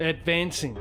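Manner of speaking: "advancing" said in an Australian accent. Too tired to pronounce a word, trying it in an australian accent. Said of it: "if I was Australian".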